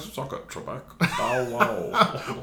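taunting, very slow, every word dragged out. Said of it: "Celebrity Jeopardy over there?".

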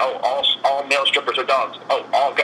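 ordinary delivery

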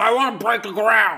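loud, high, furious shout.

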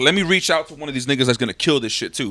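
ordinary talk

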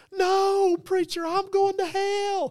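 very high-pitched, very slow, shrill drawn-out scream. Retelling a revival meeting where a woman cried out: imitating a woman screaming. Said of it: "This lady started screaming".

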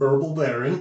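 put-on mush-mouthed mispronunciation. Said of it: "Mush mouth".

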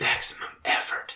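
said very quietly. Quoting a movie character's line the speaker loves, said very quietly. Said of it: "but he says it so quietly".

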